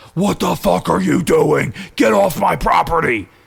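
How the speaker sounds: very loud, rough, raspy, high demonic scream. Retelling a lady confronting them from her house, imitating a Satan-like voice. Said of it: "The voice that came out of the house was like Satan himself".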